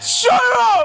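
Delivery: high, loud shouting. Playing a game, answering a grandma character's question, yelling.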